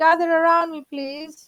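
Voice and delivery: loud, shouting call.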